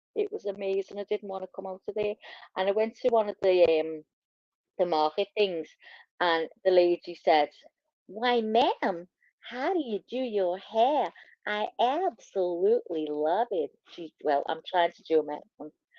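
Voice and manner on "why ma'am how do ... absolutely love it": slow, put-on American accent. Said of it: "can you keep talking like an American?".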